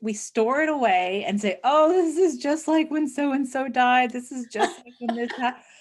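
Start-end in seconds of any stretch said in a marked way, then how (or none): 1.6-5.6 self-mocking, teasing, higher poking-fun voice. Speaker acts out what we all say to ourselves, mocking put-on quote. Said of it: "I'm not doing that to make fun of it".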